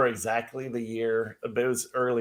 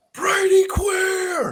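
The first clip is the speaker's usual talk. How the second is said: put-on scream, higher and louder; 5 dB louder than usual. Retelling a fan at a game who screamed at a player: imitating a fan screaming. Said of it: "this guy is screaming at the top of his lungs".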